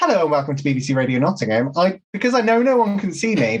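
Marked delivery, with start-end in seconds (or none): 0.0-1.7 put-on energetic radio-presenter voice. Describing how she opens shows when doing radio, in an energetic radio-presenter voice. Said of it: "when we're doing radio and I have to do my like".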